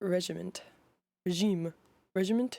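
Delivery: ordinary delivery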